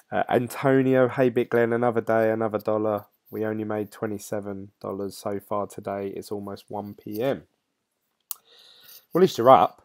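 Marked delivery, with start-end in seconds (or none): none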